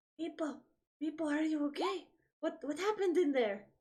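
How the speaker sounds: whispering. Whispering in character to Meepo, who stands next to him: whispering. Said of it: "I'm just gonna whisper to him".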